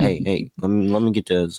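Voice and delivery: quiet, very soft, low-key, under the breath. Acting out asking the gas station clerk, speaking softly. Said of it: "you try to do it real soft".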